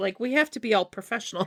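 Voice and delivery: ordinary talk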